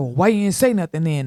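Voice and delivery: put-on stern father voice. Retelling a dad's reply in the car: imitating a dad's stern voice. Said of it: "his voice is so stern".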